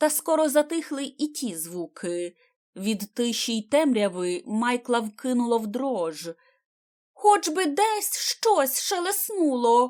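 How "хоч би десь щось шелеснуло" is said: desperate, high-pitched cry full of despair. Michael, shivering in the silence and darkness, cries out in despair. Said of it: "в розпачі вигукнув хлопець".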